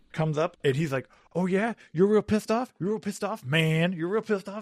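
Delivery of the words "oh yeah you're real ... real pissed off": sarcastic, needling, mocking fake-teenager voice, pitched up. Retelling a Scoutmaster taunting an angry teen: imitating a Scoutmaster mocking. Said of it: "he's trying to talk like a teenager to me".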